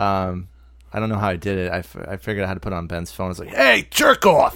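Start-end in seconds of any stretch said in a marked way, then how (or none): 3.5-4.5 put-on belligerent drunk rant, higher, louder. Retelling a voicemail greeting made for Ben: imitating a belligerent drunk. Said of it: "who's this belligerent drunk motherfucker on your phone".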